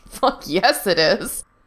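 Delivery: put-on wheezing with laughter. Fungul answers Gerard's protest: wheezing with laughter. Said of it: "Fungul wheezed".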